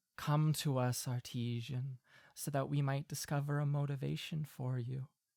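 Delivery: beckoning, calling whisper. Narrating a dark scene as an unseen voice calls to a character, whispering voice. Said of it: "you hear a whispering voice that says".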